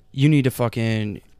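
ordinary delivery

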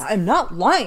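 put-on defensive tone. Acting out someone accused of lying, mock-defensive denial. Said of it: "You're immediately defensive".

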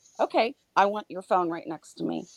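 ordinary talk

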